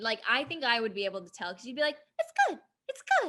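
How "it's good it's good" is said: really high-pitched, raised voice. Mimicking how the listener sounds when faking praise, in Bob's really high-pitched voice. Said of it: "you do your really high-pitched voice".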